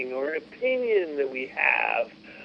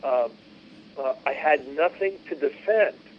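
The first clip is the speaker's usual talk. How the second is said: usual speaking voice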